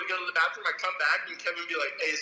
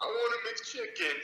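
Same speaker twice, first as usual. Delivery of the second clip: put-on drunk voice, almost crying; 4 semitones higher, 4 dB quieter than usual. Retelling Angel showing up at the door, imitating Angel's drunk crying. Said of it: "He's like crying almost".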